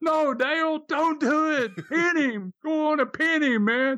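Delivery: mock, shrill, very high scream. Recounting the incident, the speaker re-enacts screaming at Dale, retelling own scream. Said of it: "I scream".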